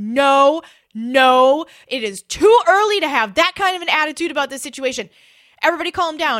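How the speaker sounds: firm, stern voice. Retelling telling a stuck crowd to calm down: retelling own loud stern order. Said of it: "in a loud, stern voice".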